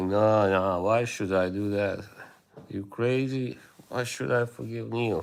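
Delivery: plain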